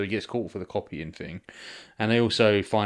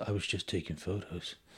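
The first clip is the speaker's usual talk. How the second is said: play-acted, sinister, creepy, unsettling voice; 11 dB quieter than usual. Retelling a film character's words after his arrest: imitating a creepy voice. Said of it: "In a creepy way".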